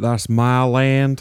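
put-on American accent. In a chat about America, doing a Forrest Gump American accent. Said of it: "Is that your American accent?".

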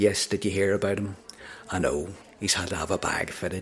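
low, put-on Northern Irish accent. Speaker retelling an overheard conversation from Northern Ireland, in a Northern Irish accent. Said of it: "I'm about to do the accent".

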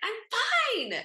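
very high, shrill, fed-up, frustrated yell. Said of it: "when she's yelled at her".

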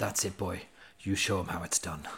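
quiet, near-muttered, under-the-breath delivery. Recalling what someone said to the listener at a performance's end, retelling it under the breath. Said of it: "just almost under his breath at the end of it".

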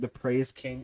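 usual speaking voice

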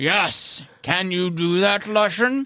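very condescending, patronising, talking-down tone. The narrator voices a character answering someone caught whispering, very condescending. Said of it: "He says it in a very condescending way".

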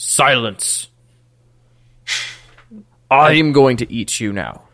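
deadpan, flat, expressionless dragon voice. Voicing a dragon that says it will eat the player: deadpan dragon voice. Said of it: "deadpan look of".

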